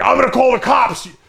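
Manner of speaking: high, loud, angry screaming yell. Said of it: "screaming back at me".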